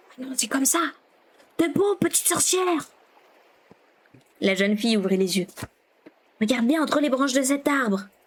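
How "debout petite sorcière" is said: smothered, stifled, muffled voice. Reading a story aloud, a character wakes the young girl, in a muffled voice. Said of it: "dit Ganta d'une voix étouffée".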